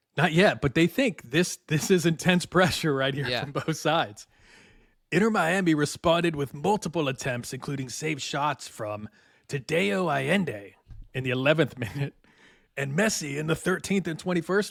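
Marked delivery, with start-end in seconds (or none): 5.1-14.7 grand, theatrical stage-actor declaiming. Recapping a soccer match in a put-on style, thespian voice. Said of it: "I'm going to use like my thespian voice".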